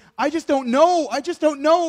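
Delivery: mock crying, tearful, high voice breaking down. Retelling a mother's words as she breaks down: imitating someone crying. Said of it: "she's breaking down and she's crying".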